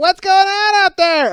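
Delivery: piercing, shrill, very high, very loud scream. Imitating a woman screaming from her chair: screamed loud and shrill. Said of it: "this loud".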